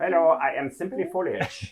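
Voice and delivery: put-on very slow, drawn-out, high German accent. Playing a character hiding as a bush: german accent. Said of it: "why is that bush talking with a German accent?".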